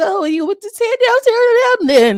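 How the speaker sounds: very high, loud, shaky quaver with no bass. Making fun of how Tilo sounded, imitating Tilo's shaky voice. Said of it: "the way Tilo was shaking in his voice".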